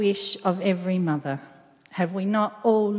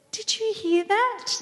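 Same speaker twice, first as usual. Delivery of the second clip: teasing, very high and playful; 13 semitones higher than usual. The narrator speaks to a woman who gives him a blank stare; teasing, grinning. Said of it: "I teased, grinning".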